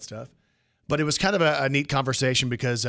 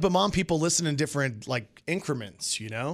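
normal talking voice

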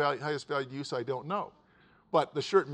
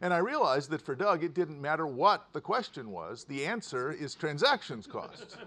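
plain

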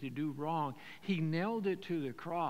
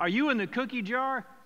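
put-on yelling voice; 7 semitones higher, 9 dB louder than usual. Retelling his mother catching his brother with cookies, imitating mother yelling. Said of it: "my mother yelled".

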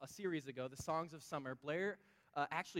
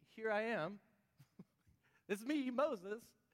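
put-on flustered voice, higher; 6 semitones higher than usual. Retelling how Moses answers the burning bush: acting out Moses answering God. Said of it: "that's probably how I would respond".

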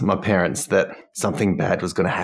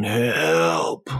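restrained cry. Retelling how a guy very quietly called out for help, imitating a quiet yell. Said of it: "very quietly yelling out for help".

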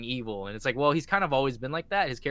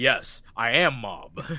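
put-on deep voice, louder; 5 dB louder than usual. Recounting a scene, the speaker quotes Mob in a deeper Mob voice. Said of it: "his voice gets deeper".

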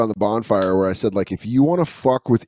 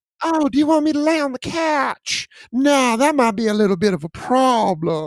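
little, very high Southern belle voice; 13 semitones higher than usual. Voicing Myrtle the dog, who was born in Tennessee: Southern belle voice for Myrtle. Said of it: "we give her a little Southern Belle".

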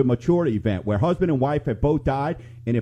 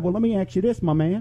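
put-on country accent, much higher pitch; 4 semitones higher than usual. Retelling chatting with a man who was talking country: country accent. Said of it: "that's my country accent".

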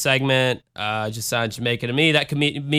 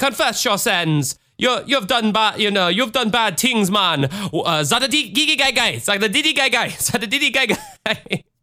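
poor put-on Jamaican accent, higher pitch; 8 semitones higher than usual. Retelling what a man said during an attack: bad jamaican accent. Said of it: "I cannot do a Jamaican accent to save my life".

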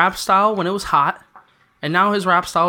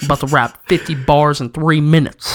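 ordinary delivery

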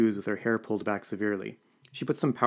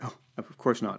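mumbled sheepishly, with embarrassment. The narrator replies to Violet's answer: embarrassed mutter. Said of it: "I muttered in embarrassment".

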